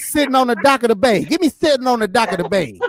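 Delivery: put-on old man voice. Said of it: "if you don't get your old man voice".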